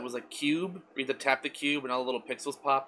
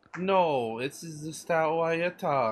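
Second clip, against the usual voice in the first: put-on, fake, comedic Italian accent; 3 semitones higher than usual. Podcast co-host answering his co-host's question, in a put-on Italian accent. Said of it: "that's not how you sound".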